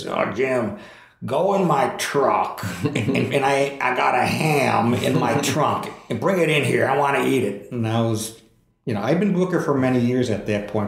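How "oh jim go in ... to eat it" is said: slow, unhurried, gravelly voice. Speaker retells a man tossing him truck keys at a restaurant; gravelly voice impression. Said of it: "in that great gravelly voice of his".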